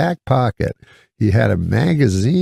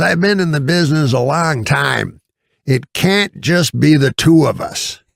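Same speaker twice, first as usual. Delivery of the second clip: high, slow, drawn-out put-on old-man voice. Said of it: "so he talks super loud".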